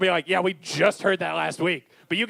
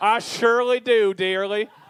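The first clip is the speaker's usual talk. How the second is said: put-on Newfoundland accent over the whole line; 3 semitones higher than usual. Echoing the other speaker's line to show it off, in a Newfoundland accent. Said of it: "Do the Newfoundland accent".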